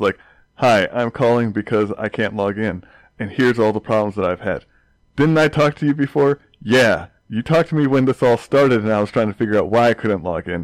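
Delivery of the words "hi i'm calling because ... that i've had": normal talking voice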